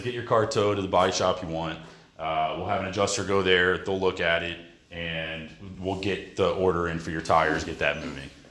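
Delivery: ordinary talk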